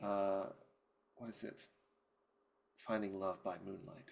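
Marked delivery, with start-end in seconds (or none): 1.2-4.1 soft half-whisper under the breath. Playing a character who half-whispers a line to themselves: half-whispering to themselves. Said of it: "Beatrice just whispers to themselves".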